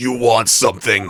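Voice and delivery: hoarse, husky tone. A lady at a mansion answers visitors who ask to question her: husky voice. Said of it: "that husky voice".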